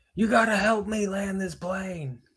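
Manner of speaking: desperate put-on yell. Retelling how a character yelled for help landing: imitating someone yelling. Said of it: "He would just yell at them".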